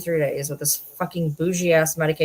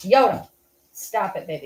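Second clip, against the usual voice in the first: slow, deliberate, drawn-out words; 3 semitones higher than usual. Calling a deaf dog by name: yelling at a dog. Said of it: "That's why I'm yelling at her".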